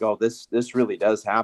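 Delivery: ordinary talk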